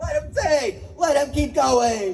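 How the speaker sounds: cheering, high pitched and slow.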